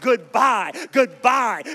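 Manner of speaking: loud, ringing shout.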